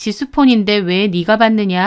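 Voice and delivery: ordinary talk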